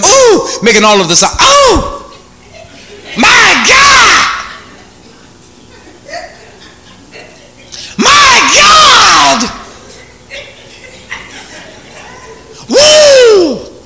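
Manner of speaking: very high, swooping, very drawn-out, thrilled excited cries. Demonstrating how an excited person sounds on the phone, excited tone. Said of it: "Excited, right?".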